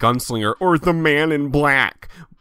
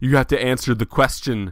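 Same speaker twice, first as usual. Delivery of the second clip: usual speaking voice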